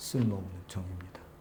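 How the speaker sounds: very soft, low, humble tone.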